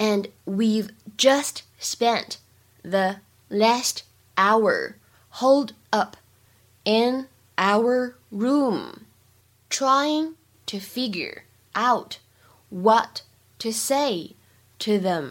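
very slow reading, phrase by phrase.

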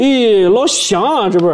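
speaking Henan dialect. Retelling how they won over a customer from Henan, speaking Henan dialect. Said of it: "我会说河南话".

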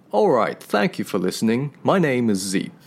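seductive, sultry put-on British accent. Signing off the podcast in English for listeners; sexy British accent. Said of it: "再一段性感的英式口音".

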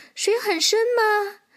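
very high, startled, surprised tone. A little horse, warned off the river by a squirrel, asks, surprised. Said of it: "小马吃惊地问".

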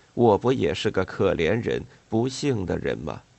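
ordinary delivery, nothing marked

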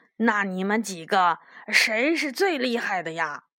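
plain

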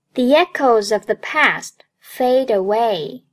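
usual speaking voice

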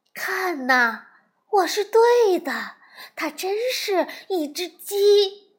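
high, astonished, triumphant exclamation. A frog watches a strange creature hatch from an egg, crying out in surprise. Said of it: "惊叫道".

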